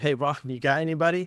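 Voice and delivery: mock-desperate, pleading tone. Retelling business owners calling to ask for a hire, imitating a desperate plea. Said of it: "I hear the desperation in their voice".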